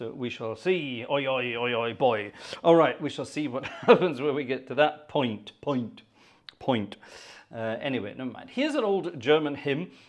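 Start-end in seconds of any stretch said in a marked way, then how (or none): 1.1-2.3 Wiltshire-accented voice. Speaker introducing a piece of music from Wiltshire, attempted Wiltshire accent. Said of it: "I'm going to attempt a Wiltshire accent".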